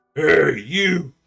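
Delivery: put-on half-ogre character voice. Game master voicing a half-ogre who walks over to the players' table. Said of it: "The half ogre walks over to your table".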